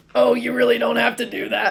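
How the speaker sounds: rough-edged, creaky put-on character voice. Acting out a line from Popular as Sean: Sean Strickland impression. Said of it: "That's my best Sean Strickland impression".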